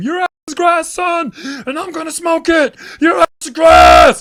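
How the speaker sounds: shrill, very loud, high-pitched hollering at full blast. Retelling what a man shouted after him as he ran out, imitating someone yelling. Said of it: "you could still hear him".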